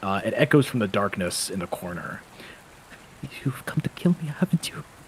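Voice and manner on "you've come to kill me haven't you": put-on strained, tired young man's voice. Game master voicing a man in a dark corner to the players: strained, tired young man's voice. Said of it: "a young man's voice, strained and tired".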